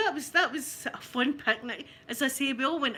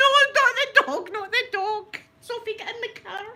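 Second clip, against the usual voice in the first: mock frantic, very high, loud, panicked voice; 10 semitones higher, 6 dB louder than usual. Retelling shouting at the dog and sophie: retelling own panicked plea.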